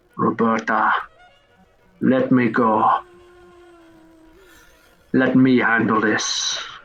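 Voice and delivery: slow whisper. A voice whispers in roberta's ear, asking to be let go: whispering. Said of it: "and you hear in your ear whispering".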